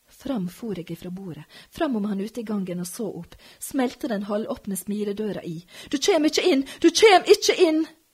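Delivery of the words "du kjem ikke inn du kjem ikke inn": piercing, shrill shriek, very high and very loud. The narrator, holding a door against a man, screams at him. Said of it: "skreik jeg mot han".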